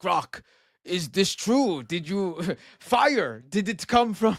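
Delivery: mocking, simple caveman-style talk. Mocking how people question Grok, with mocking caveman-style questions. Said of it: "that sounds like you're talking to a caveman".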